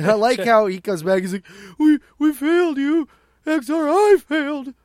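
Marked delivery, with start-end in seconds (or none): 1.8-4.6 mock whiny voice, higher and louder. Retelling a comic character's report of failure: imitating a whiny character. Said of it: "he's such a whiny little".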